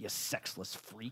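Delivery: hushed mutter under the breath, to oneself. Retelling what a player said while walking away, muttering to himself. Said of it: "He's like muttering to himself".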